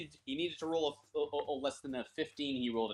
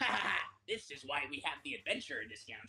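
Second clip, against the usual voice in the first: gleeful, cackling goblin voice; 5 dB quieter than usual. A game master voices a goblin looking up after a second blow, cackling goblin voice. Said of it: "one of the goblins looks up and cackles".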